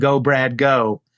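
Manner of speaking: put-on screaming, cheering fan voice. Retelling the moment of switching from commentator to fan: imitating a fan's scream. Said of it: "switch from commentator to fan and scream".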